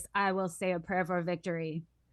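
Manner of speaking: flat, dead-level robotic monotone. Quoting JD Vance's prayer for victory in a JD Vance robot voice. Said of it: "in his robot voice".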